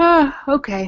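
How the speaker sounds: high-pitched words stretched through a yawn. Late in a long episode, replying to the other speaker: yawning. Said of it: "Sorry, I'm yawning".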